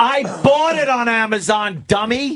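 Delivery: shrill, very high, drawn-out yell. Complaining that a show is not available after buying it: yelling. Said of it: "Why are you yelling?".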